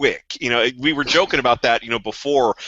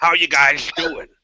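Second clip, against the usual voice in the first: words mashed and muffled around blocked jaw, mutant voice; 3 semitones higher than usual. Showing how a particular kind of mutant talks, jaw-obstructed mutant talk. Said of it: "sort of talk like this".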